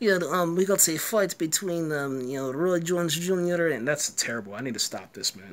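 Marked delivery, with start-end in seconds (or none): 0.0-3.7 dubious, questionable put-on Russian accent. Acting out someone introducing a fight, in a questionable fake russian accent. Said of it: "I don't even know if that was a Russian accent".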